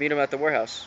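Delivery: ordinary delivery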